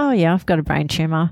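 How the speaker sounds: put-on offhand, casual, matter-of-fact delivery. Retelling what a child said when asked about his hair: imitating a matter-of-fact tone. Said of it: "he just said it so matter of fact".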